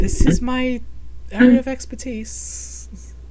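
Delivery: put-on girly, girl-like voice.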